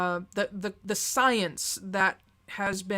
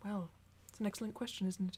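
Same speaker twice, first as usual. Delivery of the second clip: sudden switch into a put-on British accent; 11 dB quieter than usual. Retelling a reply to students who ask why the speaker is suddenly British: British accent. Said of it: "Why are you all of a sudden British".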